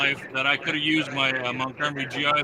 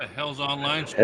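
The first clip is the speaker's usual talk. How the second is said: ordinary talk, nothing marked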